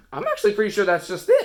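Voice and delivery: voice cracking on the word "it". Wrapping up a video for viewers, voice cracking on 'it'. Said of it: "What was that voice crack with the it?".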